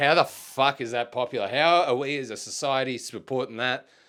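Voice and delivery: ordinary talk, nothing marked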